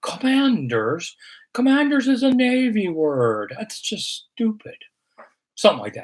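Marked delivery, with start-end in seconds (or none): 0.0-4.8 put-on slow, high, drawn-out old-man voice. Answering a listener's question about the name Commanders: Jack Kent Cooke impression. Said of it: "That's my old Jack Kent Cooke impression".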